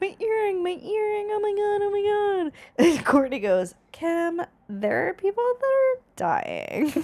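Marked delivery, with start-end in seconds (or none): 0.0-2.5 play-acted very high, drawn-out crying voice. Retelling a story, the speaker imitates Kim crying as she pops up to the surface.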